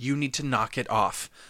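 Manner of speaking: ordinary delivery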